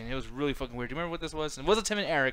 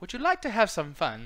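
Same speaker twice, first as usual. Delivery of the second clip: grand, queenly, regal streetwalker voice; 4 semitones higher than usual. Joking about high-class escorts, the speaker tries a regal lady-of-the-night voice. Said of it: "what a very like regal hooker would sound like".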